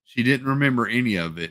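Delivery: ordinary delivery, nothing marked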